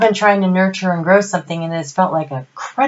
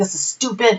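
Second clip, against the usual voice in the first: put-on annoyance, mock-angry tone. Recalling an embarrassing moment at church, retelling being mad. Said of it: "So I'm mad".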